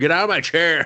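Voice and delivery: put-on high shout. Retelling yelling at family like the movie character: retelling own yell. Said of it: "'cause I yelled at it".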